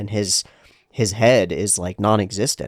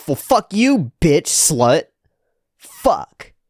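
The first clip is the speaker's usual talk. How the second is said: mock outburst, high, swooping and drawn out; 7 semitones higher, 4 dB louder than usual. Retelling how a rejected guy answers a girl: imitating a rejected guy's outburst. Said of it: "And he's like".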